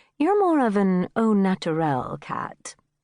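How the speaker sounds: usual speaking voice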